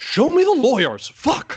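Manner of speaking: shrill, very high, loud outburst with wild pitch swings. Opening the podcast with a quick line: Adam Driver impression. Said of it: "That's a great Adam Driver impersonation".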